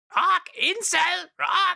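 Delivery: very high, squawking parrot mimicry voice. Mimicking a parrot repeating words back, parrot impression. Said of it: "I need to work on my parrot impression".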